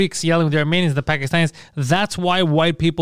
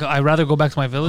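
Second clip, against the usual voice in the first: usual speaking voice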